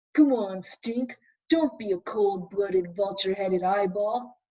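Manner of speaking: deep, low action-figure voice, like a puppet. Sophie makes the Shakespeare action figure talk to Stink, in a deep voice. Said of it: "made him talk in a deep voice".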